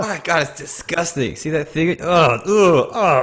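high, loud, dragged-out, funny grossed-out voice.

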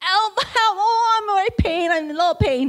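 shouting out in pain. Retelling how her mom shouted for help at night, imitating a shout of pain. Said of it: "And she shouted".

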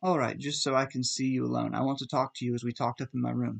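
ordinary talk

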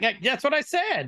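high, wide-pitched, laughing, mocking delivery.

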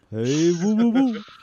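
loud, goofy, belted delivery. Someone has just said you sound like Yogi Bear; play along in a Yogi Bear voice. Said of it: "You sound like Yogi Bear".

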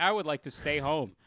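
plain

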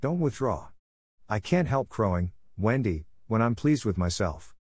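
ordinary delivery

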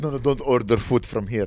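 put-on Arabic accent. Retelling what a guy at a restaurant said, Arabic accent. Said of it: "I don't know why he has an Arabic accent".

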